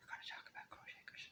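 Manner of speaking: very soft, hushed, breathy whisper. Announcing what the video will talk about today: whispering. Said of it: "Why am I whispering?".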